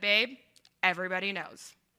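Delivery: heavy, dry sarcasm, put-down tone. Retelling the wife's reply in the kitchen: imitating wife's sarcasm. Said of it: "with enough sarcasm to prove her point".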